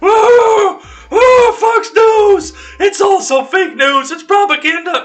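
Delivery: very high, very loud, shrill, harpy-like screeching. Mocking the D C C C's imagined reaction to a Fox Business request: mock harpy shriek. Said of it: "That was a weird voice".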